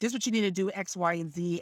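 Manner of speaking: normal talking voice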